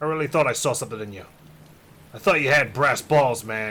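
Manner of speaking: plain reading voice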